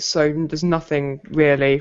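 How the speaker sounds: ordinary delivery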